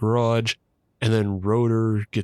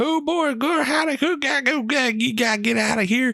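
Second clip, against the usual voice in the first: fake rural gibberish. Retelling a movie scene, imitating a redneck's gibberish. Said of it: "this redneck running out of the garage going".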